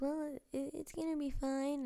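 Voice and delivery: put-on girl voice. Retelling what the teacher said after the crying: imitating a girl's voice. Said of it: "one of your characters is a girl".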